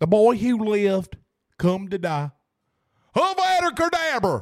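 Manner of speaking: slow, drawled put-on country accent. Saying the 'boy who lived' line in a put-on country accent. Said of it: "let me put it in a country accent".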